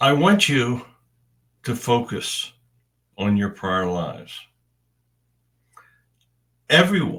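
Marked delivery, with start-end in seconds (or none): 6.7-7.2 everyone stressed, hit high and loud. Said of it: "and I stress the word everyone".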